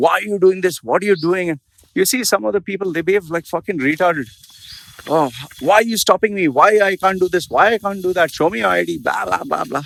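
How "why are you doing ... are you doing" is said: mock screaming, much higher. Describing people who are stopped and start screaming, imitating someone screaming. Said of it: "you don't start screaming".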